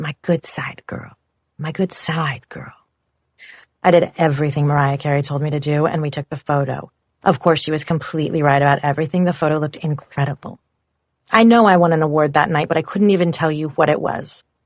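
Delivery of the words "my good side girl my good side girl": deep, breathy, beautiful low voice. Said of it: "in her deep, beautiful voice".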